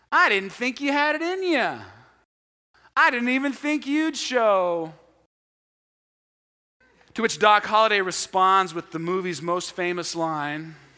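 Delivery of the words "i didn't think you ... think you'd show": very cocky, swaggering, high taunting tone, drawn out. Retelling a gunfighter's taunt to his arriving opponent: imitating a cocky tone. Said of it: "in a real cocky tone".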